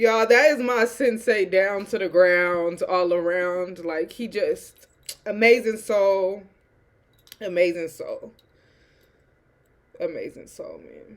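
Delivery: talking through tears, tearful crying speech. Talking about their sensei, the speaker is moved to tears: crying while talking. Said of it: "why am I crying?".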